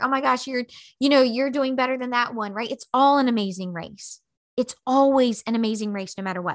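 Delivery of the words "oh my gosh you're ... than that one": usual speaking voice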